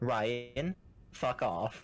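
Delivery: plain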